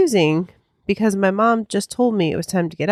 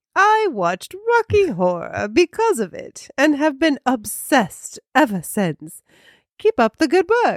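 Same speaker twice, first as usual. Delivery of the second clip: put-on high-pitched posh British accent; 6 semitones higher than usual. Reading out a listener's review of the show, in a Mary Poppins-like posh British accent. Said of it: "now I'm getting into, I don't even know what".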